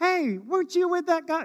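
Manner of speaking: put-on high-pitched young schoolgirl voice. Retelling a middle school girl questioning Peter after Jesus's arrest, middle school girl voice. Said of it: "that's my middle school girl voice".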